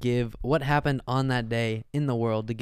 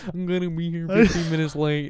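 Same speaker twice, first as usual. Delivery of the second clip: teasing, mocking voice, pitched higher; 6 semitones higher, 3 dB louder than usual. Reading out the other speaker's text in their voice: imitating the other speaker's text voice. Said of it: "That's how I read your text".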